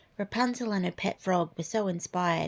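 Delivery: plain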